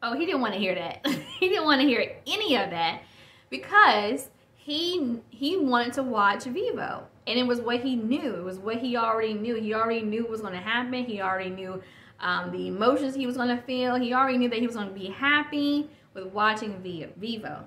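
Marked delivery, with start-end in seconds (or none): 9.6-11.0 fast, rushed speech. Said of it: "I apologize for talking too fast".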